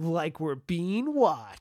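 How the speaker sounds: slow, drawn-out, oddly showy announcer-like delivery. Imitating how a character pronounces a line weirdly: weird Luke line delivery. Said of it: "how weird he d-, pronounces that line".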